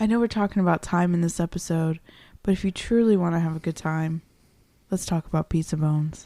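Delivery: put-on sultry, seductive voice. Wrapping up an episode, offering the other host a segue, in a sultry voice. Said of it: "Why are you using that voice?".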